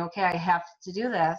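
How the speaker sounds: ordinary talk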